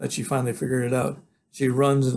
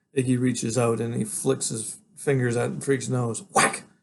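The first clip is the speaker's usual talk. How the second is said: plain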